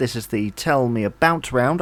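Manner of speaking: usual speaking voice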